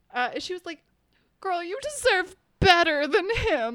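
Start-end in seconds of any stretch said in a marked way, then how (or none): 1.4-3.7 loud, high, put-on drunk girl gushing. Retelling meeting a drunk girl in a frat hallway: imitating a drunk girl. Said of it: "this drunk girl in the middle of the hallway".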